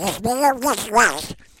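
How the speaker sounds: very high speech out of the side of the mouth. Retelling answering a teacher at school at twelve, talking out the side of the mouth. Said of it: "Out the side of my mouth".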